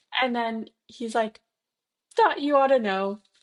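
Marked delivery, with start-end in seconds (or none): 2.1-3.1 voice fading away weakly. Acting out Quirrell passing out in the movie: Quirrell from the movie, fainting. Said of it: "as he's basically passing out in the movie".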